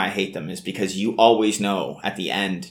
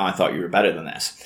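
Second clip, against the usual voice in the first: acted disgust, lower pitch; 3 semitones lower than usual. Recapping a fight scene, acting out her reply as mock-disgusted. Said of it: "she's all disgusted".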